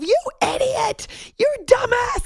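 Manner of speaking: very high, furious, angry yelling shout. Recalling a disaster, she acts out what she yelled at herself, retelling yelling at herself. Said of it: "I yelled at myself".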